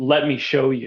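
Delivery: mock deep, booming voice. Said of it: "it was this deep, deep voice".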